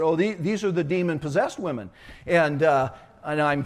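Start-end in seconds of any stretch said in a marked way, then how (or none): none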